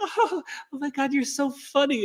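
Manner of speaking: very high, slow, sweet, giggly gushing voice. Imitating a smitten woman talking to her crush: imitating a smitten giggly woman. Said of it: "they get in their divine feminine and they're like".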